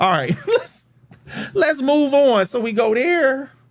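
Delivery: nervous, very high voice, cracking and breaking. Showing viewers how to find a company's investor page, nervous, voice cracking. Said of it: "my voice cracking and everything".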